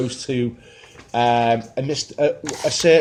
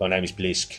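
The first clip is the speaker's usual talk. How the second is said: thick, laid-on South African accent; 7 semitones lower, 7 dB quieter than usual. Quoting the game character Blisk from a trailer: Blisk voice, thick South African accent. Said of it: "another thick South African accent".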